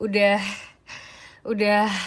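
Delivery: out of breath. After climbing many stairs, speaking to viewers while out of breath. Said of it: "tuh kalian dengar suara nafas aku sekarang".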